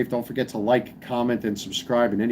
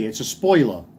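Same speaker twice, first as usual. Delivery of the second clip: New Yorker's way of talking. Showing how New Yorkers say certain words, in a New York accent. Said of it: "New Yorkers say it's, hey".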